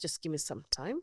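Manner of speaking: usual speaking voice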